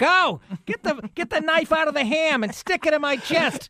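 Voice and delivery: put-on very high, wailing voice of an old woman. After telling someone to go, the speaker slips into an Olivia Soprano impression. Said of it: "I sound like Olivia Soprano".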